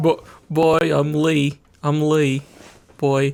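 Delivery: put-on English accent. Joking around at the end of a video: put-on English accent. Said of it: "That better not be an English accent".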